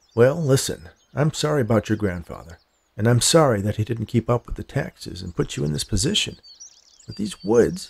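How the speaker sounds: plain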